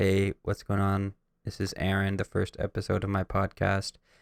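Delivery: imitated whisper. Imitating own first podcast episode intro: imitating own past whisper. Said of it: "in my room whispering".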